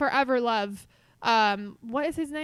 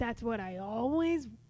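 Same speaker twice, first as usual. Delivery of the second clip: put-on cartoon monster voice, quieter; 2 semitones lower, 6 dB quieter than usual. Attempting a requested Han Solo impression, slipping into Roz voice. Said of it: "Going back into Roz".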